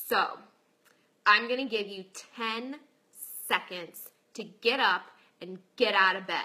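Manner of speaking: very deep, super intense voice. Retelling how a man woke the speaker up this morning: imitating a really deep intense voice. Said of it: "he's like this really deep voice".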